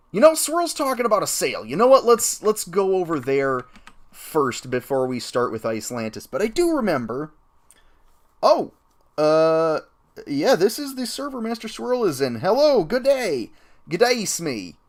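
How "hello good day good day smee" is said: clumsy, bad put-on Australian accent. Greeting Smee on the game server, bad Australian accent. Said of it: "I wish I could do a good Australian accent".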